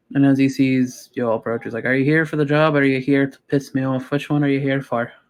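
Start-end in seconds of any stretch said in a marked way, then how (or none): 1.9-5.1 put-on fed-up, cranky, irritated old satyr voice. Voicing an old satyr at the bay entrance as the group approaches: irritated old satyr voice. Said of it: "everything just pisses him the fuck off".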